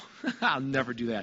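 light, teasing, low joking throwaway tone. Speaker showing how a phrase can be said, in a joking tone. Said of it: "in sort of a joking way".

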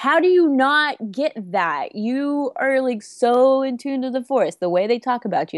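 high, drawn-out, frustrated, exasperated yell. Retelling a frustrated reaction to a comic: imitating own screaming. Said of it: "literally screaming at my computer going".

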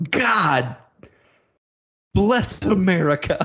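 sudden, high, yelled scream. Retelling the coach screaming out in front of the team, retelling a scream. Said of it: "And he screams out".

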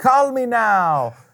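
put-on very high, loud, thick Jamaican accent. Show someone who missed the reference how the TV commercial fortune teller talked, Miss Cleo voice, thick Jamaican accent. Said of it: "she had this thick Jamaican accent".

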